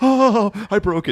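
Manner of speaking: put-on very high, very slow, stretched-out panic. Imitating another speaker panicking over a broken lid: imitating Taylor's panic. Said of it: "I can't force panic".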